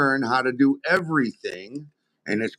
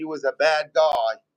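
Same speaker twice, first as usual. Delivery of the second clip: plain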